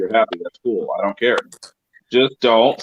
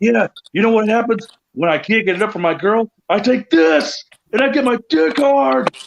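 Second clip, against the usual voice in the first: very high, salesy TV commercial read; 12 semitones higher than usual. Acting out a Viagra commercial for a friend as a joke: mock Viagra commercial voice. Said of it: "he'd be better off doing Viagra commercials".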